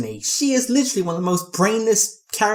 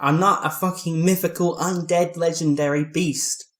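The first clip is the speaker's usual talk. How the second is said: plain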